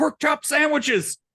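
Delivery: shrill, very high, loud soldier's yell. Retelling a scene where a fire starts and someone runs in: G.I. Joe shouting. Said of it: "comes running in and shouts".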